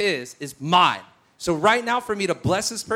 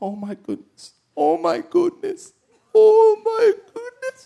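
play-acted very high, loud sobbing wail, losing it; 14 semitones higher, 6 dB louder than usual. Retelling how a man started losing it: imitating a man starting to cry.

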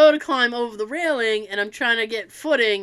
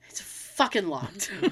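put-on panicked voice, lower and quieter; 4 semitones lower, 9 dB quieter than usual. Retelling finding the door bolted shut: imitating Tara panicked. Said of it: "you hear Tara panicked going".

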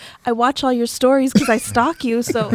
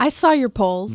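condescending, patronizing tone. Remarking to another speaker about their polls: condescending tone. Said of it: "the condescending tone".

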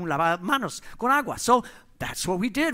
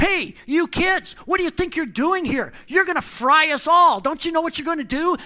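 put-on shouting, higher and louder; 9 semitones higher, 5 dB louder than usual. Retelling how an office manager caught kids with squirt guns: imitating a manager yelling. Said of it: "he started yelling at us".

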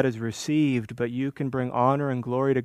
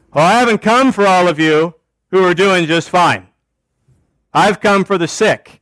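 very loud, high, dripping sarcasm; 5 semitones higher, 11 dB louder than usual. Quoting Jesus while preaching about grace: imitating Jesus, sarcastic.

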